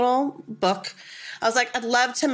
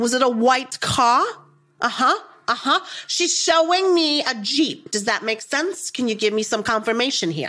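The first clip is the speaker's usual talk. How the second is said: thick put-on New Jersey Italian accent. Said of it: "the thickest, most incredible Jersey accent, Italian accent".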